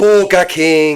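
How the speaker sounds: put-on, very loud, high inner-city Dublin accent. Showing how people from part of Dublin say a word: imitating Dublin accent. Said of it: "people from a certain area of Dublin will just be like".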